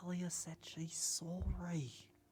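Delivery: hushed whisper. Asking a party member in character whether they heard something: whispering. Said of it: "it sounds like you're whispering".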